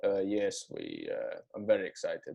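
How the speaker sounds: dragged out slowly, dead serious. Retelling a driver answering reporters after winning a race: deadpan Kimi Raikkonen impression. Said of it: "with a straight face".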